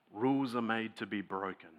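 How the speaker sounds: very quiet, low, soft, conspiratorial aside. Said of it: "very quietly say to us".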